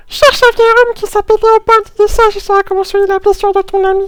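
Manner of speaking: very high, near-chipmunk character voice. Voicing another character's line, the speaker uses a put-on character voice. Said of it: "refaire la voix de l'autre... pas trop faire chipmunk".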